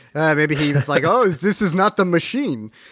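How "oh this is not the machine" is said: terrible put-on Russian accent. Imagining what a fellow moviegoer thought of the film, terrible Russian accent. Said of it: "That was a terrible accent".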